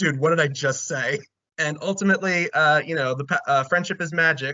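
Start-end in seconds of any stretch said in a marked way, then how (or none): 0.0-1.2 mock sarcastic tone. Retelling an episode scene, quoting Ron: imitating Ron's sarcastic retort. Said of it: "Ron just sarcastically goes".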